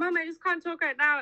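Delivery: panicked voice, cutting off. Retelling a phone call with Mum: retelling a panicked voice. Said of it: "the panic in my voice".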